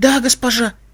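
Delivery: frightened whisper. A cleaner answers the woman giving her orders in a frightened whisper. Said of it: "испуганно прошептала уборщица".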